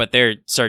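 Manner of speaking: ordinary talk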